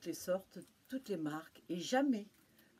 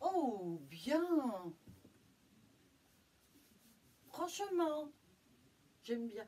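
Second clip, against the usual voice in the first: odd, silly put-on voice, high and drawn out; 5 semitones higher than usual. Giving an opinion on a pair of underwear: funny voice. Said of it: "je prends une drôle de voix".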